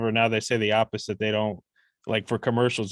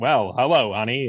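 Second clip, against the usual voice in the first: put-on vintage old Hollywood movie-star Transatlantic accent; 4 dB louder than usual. Imitating how people sounded in old movies: old Hollywood movie accent. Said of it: "people used to just sound kinda more like this".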